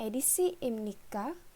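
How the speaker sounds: imnika with rising pitch on its final syllable. Explaining that question phrases rise at the end, rising pitch at end of imnika. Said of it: "akhiran kalimatnya jika dibaca akan e, meninggi".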